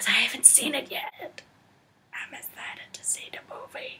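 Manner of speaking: hushed, soft whisper. Speaker explaining plans for a gathering, whispering.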